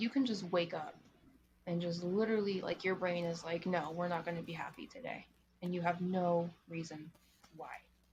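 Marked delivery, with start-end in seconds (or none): none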